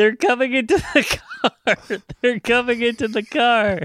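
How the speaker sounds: play-acted, very high-pitched panicked toddler scream. Speaker recalls a family movie outing at about three years old, retelling screaming. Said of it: "I just started screaming".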